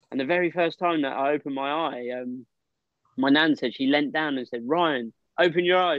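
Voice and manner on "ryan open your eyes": firm, stern, commanding tone. Retelling a grandmother's words at a hospital bedside: imitating a stern voice. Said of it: "she's quite a stern voice, my nan".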